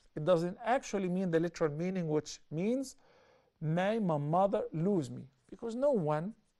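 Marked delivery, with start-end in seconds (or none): none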